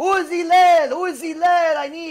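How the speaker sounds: acted, loud, high-pitched scream. Retelling a story, acting out a man calling for hillel: imitating someone screaming. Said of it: "He's screaming like he never saw him before".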